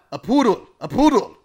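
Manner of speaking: put-on heavy Hungarian accent, shrill, booming, high and loud. Retelling Michael Curtiz reacting on set to a crew member, thick Hungarian accent. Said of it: "a hungarian with a really thick accent".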